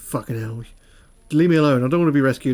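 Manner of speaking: sulky, grumpy, unwilling voice. Making up lines for a prisoner in a picture who refuses rescue. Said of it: "This guy is like".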